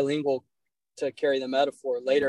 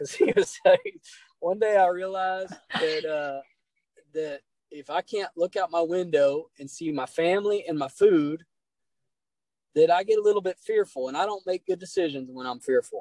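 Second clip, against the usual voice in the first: put-on older man speaking in a Texas accent throughout; 4 semitones higher than usual. Speaker quoting an older man's words to him, imitating a Texas accent. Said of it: "I'm doing a Texas accent now".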